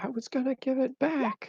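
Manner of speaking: loud yelling, shouting. In character, stabbing at the monster while answering its attack: yelling back at a monster. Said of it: "I just yell back".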